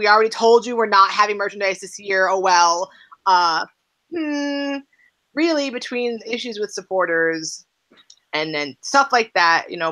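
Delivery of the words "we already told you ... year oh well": acted-out, snarky, sassy, dismissive brush-off. Retelling a team account's reply to a fan: imitating a sarcastic reply. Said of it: "had to be sarcastic, sassy".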